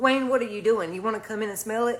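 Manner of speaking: ordinary delivery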